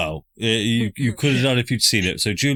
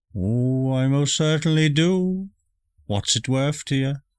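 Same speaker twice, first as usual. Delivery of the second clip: put-on elderly woman character voice; 3 semitones higher than usual. Voicing the old lady answering a lost traveler seeking the pub: old lady voice. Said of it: "an old lady just outside of her window".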